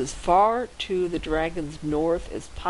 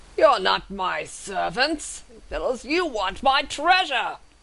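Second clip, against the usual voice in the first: enraged, raging dragon voice; 5 semitones higher than usual. Storyteller voices a red dragon speaking to the party, enraged dragon voice. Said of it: "his eyes go wide in rage".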